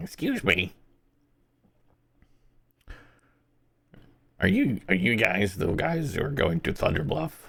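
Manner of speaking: small, tiny, shrunken goblin voice. Game master voicing a goblin who addresses the party, tiny little goblin voice. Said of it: "tiny little goblin voice".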